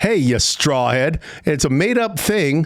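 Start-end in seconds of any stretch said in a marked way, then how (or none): 0.0-1.2 mocking, insulting tone. Showing how tone turns a made-up name into an insult: insulting tone. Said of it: "sounds like an insult because I just, but because of the way I said it".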